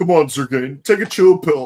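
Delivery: acted sarcastic heroic voice. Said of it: "the Navy one is still as sarcastic as always".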